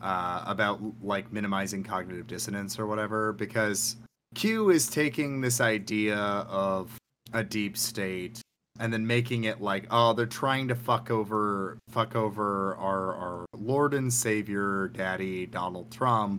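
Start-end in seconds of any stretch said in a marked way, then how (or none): none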